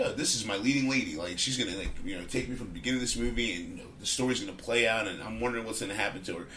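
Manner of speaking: usual speaking voice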